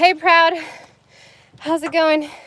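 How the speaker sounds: winded, still catching breath. Greeting someone while out of breath. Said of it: "I'm like out of breath".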